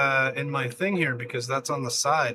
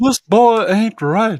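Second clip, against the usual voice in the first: very loud, high-pitched, belted proclamation; 7 semitones higher, 12 dB louder than usual. Quoting a commenter's line after saying they can't do it: Hank Hill impression. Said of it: "I can't do a Hank Hill impression".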